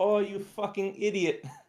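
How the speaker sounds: put-on exclamatory Brazilian accent, pitched high. Speaker quotes Paulo's reaction while he was helping, in Paulo's Brazilian accent. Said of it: "and his Brazilian accent".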